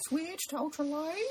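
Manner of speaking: really sad voice, pitched very high. Showing a really sad version of the voice: sad Nicolas Cage voice. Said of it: "Really sad Nicolas Cage".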